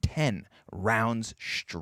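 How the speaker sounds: ten rounds straight, every word heavily hammered. A commentator calls the round, stressing 'ten rounds straight'. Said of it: "don't say it like that".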